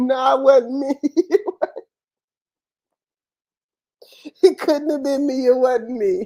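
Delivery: fake tearful voice. Imagining denying the crime to the feds: mock crying denial. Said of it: "I'd be crying for my fucking life".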